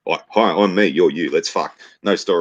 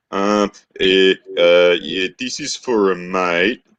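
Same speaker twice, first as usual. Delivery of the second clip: bashful, sheepish, very slow and drawn-out delivery; 3 semitones higher, 3 dB louder than usual. Retelling a weirdo asking on behalf of a mate, imitating a sheepish guy. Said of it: "he's like all sheepish".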